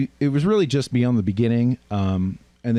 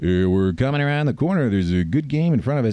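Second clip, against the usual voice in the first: put-on announcer-style voice. Speaker showing how his read should have sounded instead, announcer voice. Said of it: "I did an announcer voice".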